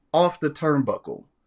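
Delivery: plain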